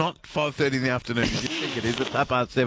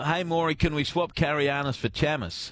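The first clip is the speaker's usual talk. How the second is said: ordinary delivery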